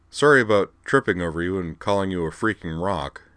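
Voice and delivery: plain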